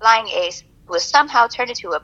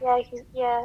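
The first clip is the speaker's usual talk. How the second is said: put-on glum, downcast, soft and sad voice; 8 dB quieter than usual. Imitating how the other speaker just answered: imitating a sad-sounding reply. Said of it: "Why did you sound sad?".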